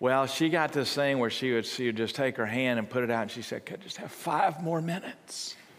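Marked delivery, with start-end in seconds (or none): 3.6-5.5 acted, high-pitched, pitiful begging voice. Retelling how Abby begged to stay in bed, imitating Abby's pitiful voice. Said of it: "With this pitiful voice".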